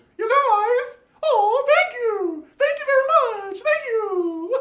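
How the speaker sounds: very high, loud, squeaky cartoon-mouse voice. Retelling a birthday dinner, quoting Anne Marie in her Mickey Mouse voice. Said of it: "the Mickey Mouse voice".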